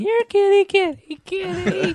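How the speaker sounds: put-on very high, squeaky, tipsy voice. Retelling a wife running through the house calling the cat: imitating a tipsy wife. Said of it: "is tipsy because she's w-, running through the house going".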